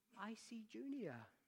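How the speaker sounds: meek, timid, small voice, soft and high. Telling a story about Junior looking in a mirror; imitating Junior's timid voice. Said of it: "in his timid voice".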